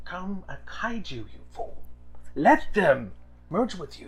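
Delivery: in-character whisper. Playing a character who walks over and whispers to another: whispering in character. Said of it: "and I whisper in his ear".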